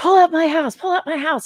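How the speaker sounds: shrill, high, loud, repeated hollering. Describing someone's ranting habit to friends, imitating him yelling. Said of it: "and he'll be yelling about it".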